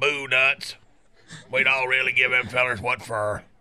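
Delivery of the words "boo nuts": normal talking voice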